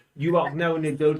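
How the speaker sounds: ordinary talk, nothing marked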